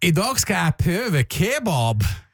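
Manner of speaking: attempted Trønder dialect. Trying the line again as a Trønder, in an attempted Trøndelag dialect. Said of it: "Kanskje du skal være trønder?".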